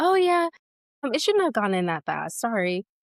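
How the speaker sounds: breezy, casual, offhand, unbothered delivery. Retelling how the nurse apologized after a painful moment: imitating a nonchalant nurse. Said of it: "she really was so chill".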